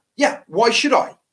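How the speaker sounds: play-acted sudden angry flare, pitched high. Quoting a man's reply to a sarcastic comment, retelling a flash of anger. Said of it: "it's a real flash of anger".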